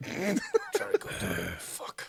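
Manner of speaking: imitated rough, gruff voice. Joking with friends about The Witcher, doing a Geralt voice.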